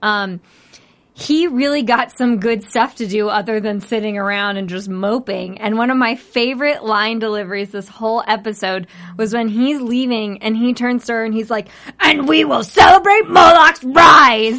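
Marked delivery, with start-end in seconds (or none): 12.0-14.6 very loud gleeful fury, drawn-out stretching rise. Retelling a villain's parting line: imitating an angry but excited delivery. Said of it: "he was just so angry, but excited".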